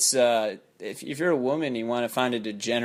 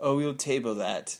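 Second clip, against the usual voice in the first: put-on Lithuanian accent. Retelling what a coworker said about an idea: imitating boss's Lithuanian accent. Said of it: "He has an accent".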